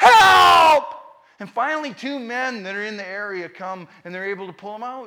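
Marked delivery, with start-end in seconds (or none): 0.0-0.8 high, loud yell. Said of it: "they're yelling".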